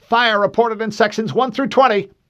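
shrill, very high, very loud, panicked. On a tumbling ship, the ops officer answers the captain, panic creeping in. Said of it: "panic creeping into his voice".

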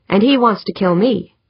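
ordinary delivery

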